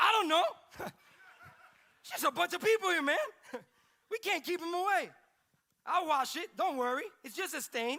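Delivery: put-on very loud, high, flustered, frantic babble. Retelling a story, voicing Peter's reply: imitating Peter freaking out. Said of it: "He's like freaking out".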